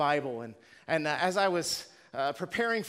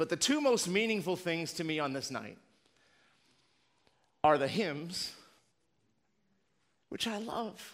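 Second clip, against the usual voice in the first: choked-up voice, catching with emotion. Telling listeners what means most to them on this night, choked up. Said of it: "Sorry, I'm on an emotional wreck".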